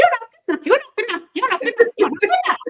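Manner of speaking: very high, fast, shrill, squeaky puppet voice. Showing how to change an inner critic's voice, in a little Punch and Judy voice. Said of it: "Little Punch and Judy voice".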